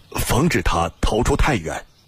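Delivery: ordinary delivery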